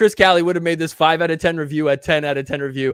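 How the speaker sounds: normal talking voice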